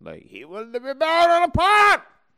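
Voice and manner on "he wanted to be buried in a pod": very high, loud yell. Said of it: "Why are we yelling?".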